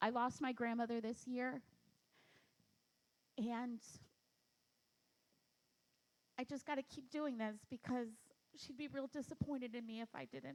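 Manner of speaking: soft, choked-up voice, on the verge of tears. Guest opening up about something super personal, choking up, about to cry. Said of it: "I'm gonna cry".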